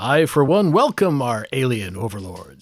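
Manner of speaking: booming newscaster-style announcer voice. Quoting The Simpsons in conversation, doing the Kent Brockman booming announcer voice. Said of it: "That booming announcer voice".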